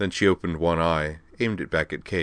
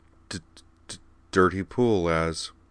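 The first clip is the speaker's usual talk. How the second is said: plain reading voice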